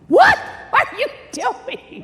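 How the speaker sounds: very high, swooping, shrill, loud scream. Retelling what she screamed at him, retelling a scream. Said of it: "she starts screaming at him like".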